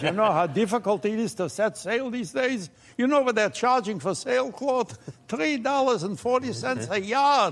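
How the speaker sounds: put-on pirate character voice with a Yiddish accent.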